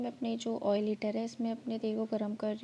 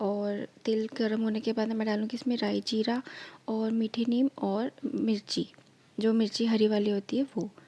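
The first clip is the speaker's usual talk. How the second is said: husky, hoarse, half-whispered voice. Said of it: "मेरा गला थोड़ा सा ख़राब हो गया है".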